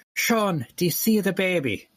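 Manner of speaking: put-on high-pitched Irish accent. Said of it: "in an Irish accent saying".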